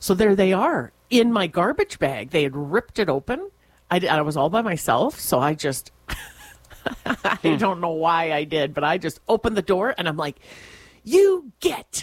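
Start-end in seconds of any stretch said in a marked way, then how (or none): 11.0-12.0 mock, very high, most commanding authoritative voice. Retelling opening the door on whatever ripped the garbage bag, retelling an authoritative command. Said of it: "I said in my most authoritative voice".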